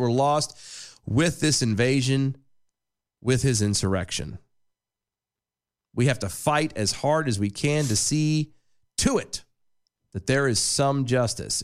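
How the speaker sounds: ordinary talk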